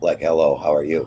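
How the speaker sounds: deep voice pushed down low. Showing the other speaker they can freak them out too, very low voice. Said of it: "go very low voice".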